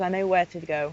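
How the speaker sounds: ordinary talk, nothing marked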